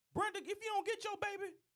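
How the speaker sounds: very high-pitched, scolding lady voice. Telling a story about a left-behind baby, doing an impression of a lady. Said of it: "that's my impression of a lady saying somebody come get your baby".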